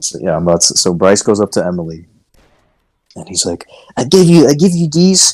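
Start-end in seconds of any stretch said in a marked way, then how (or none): 4.0-5.3 very high cartoonish creature voice. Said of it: "he talked like Meowth".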